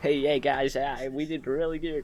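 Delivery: put-on slow, clumsy, butchered American accent. Quoting what Ashes said about how they did: butchered American accent as Ashes. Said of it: "I can't do an American accent, I'm sorry, Ashes. I butchered your fucking accent".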